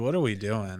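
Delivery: put-on disappointed reaction. Retelling a reaction to the movie's openings: imitating own disappointed reaction. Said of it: "You sound so disappointed".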